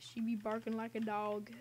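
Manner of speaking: ordinary delivery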